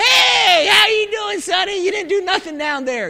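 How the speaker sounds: high, put-on grandmother voice. Picturing a grandmother greeting someone at heaven's doors: imitating a grandmother. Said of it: "except my grandmother that prayed for me".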